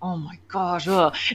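muttering under breath. Retelling a car ride with rambunctious kids, muttering under breath. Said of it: "muttering under my breath".

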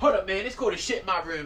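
high yell called out from the far side of a room. Talking to his audience from across his bedroom, yelling from across the room. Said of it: "I'm yelling".

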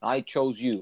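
ordinary talk

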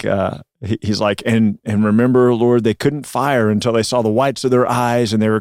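usual speaking voice

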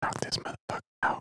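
hushed whisper spoken very close. Retelling grabbing Otto and speaking to him: whispering in his ear. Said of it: "I whisper in his ear".

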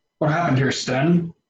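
plain, simple, direct straightforward tone. Narrating a scene, voicing a man who walks up and asks: asking quietly. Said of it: "kind of quietly".

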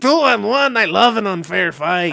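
Mexican accent impression. Correcting a friend's version of the cactus's line, mexican character accent. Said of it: "he's doing a Mexican character the whole time".

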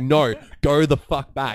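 loud, high, drawn-out shout. Retelling shouting at a boxer from the corner: imitating someone shouting. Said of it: "we're shouting at him".

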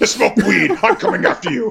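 creaky slasher-villain voice. Imitating Freddy Krueger turned anti-drug advocate, Freddy Krueger impression. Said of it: "He just become like, like an anti-drug advocate".

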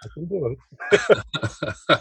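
slow, drawn-out Russian accent.

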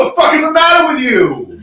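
high, mock outraged yell.

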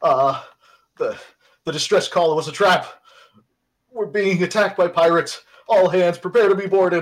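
very loud, trembling, shaky frightened voice. Narrating an attack on the ship, the speaker voices the captain on the intercom: shaky, frightened voice. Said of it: "the captain's shaky, frightened voice over the ship's intercom".

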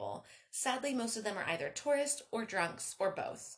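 plain reading voice

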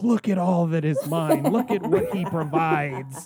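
put-on screaming character voice. Retelling a film scene in a tiny room: imitating Jeremiah screaming. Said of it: "he's screaming, like".

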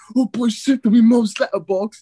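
put-on British hooligan accent. Describing a favorite video, quoting a masked british hooligan, in a british hooligan accent. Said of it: "the street hooligan British accents".

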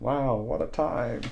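soft, put-on old person voice. Imagining looking back on this in 2050, speaker uses an old person voice. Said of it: "That was my old person voice".

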